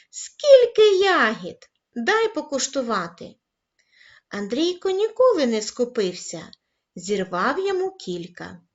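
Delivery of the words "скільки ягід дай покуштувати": high, loud, thrilled and admiring delighted outcry. A boy runs up to another boy and glances at his garden bed: delighted exclamation. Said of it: "захоплено вигукнув".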